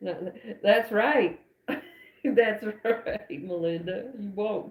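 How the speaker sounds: words broken up by laughing throughout. Reading aloud after laughing hard, the speaker answers Melinda, laughing while talking. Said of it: "I am crying because I'm laughing so hard".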